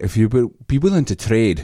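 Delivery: attempted Scottish accent, sounding Irish. Asked to try a Scottish accent, the speaker gives one: Scottish accent sounding Irish. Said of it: "That's more Irish".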